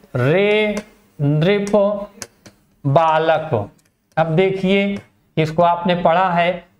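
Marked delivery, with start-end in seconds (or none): 0.2-3.7 heavy stress placed on रे. Explaining the address word in a grammar lesson, stress on रे. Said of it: "तो रे पे हमने जो जोर दिया है".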